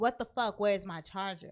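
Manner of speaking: put-on screaming in anger. Retelling finding the charger missing after a long shift, retelling an angry scream. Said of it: "I'm screaming".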